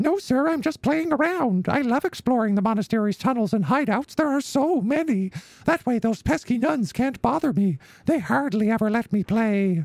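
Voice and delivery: put-on slightly odd, very high little-girl voice. Voicing a little girl calling to Hat Man: slightly odd Minnie Mouse voice.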